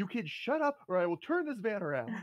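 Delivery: high-pitched scolding parent voice. Picturing the other player in a car: imitating a parent yelling. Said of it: "a car yelling at the kids".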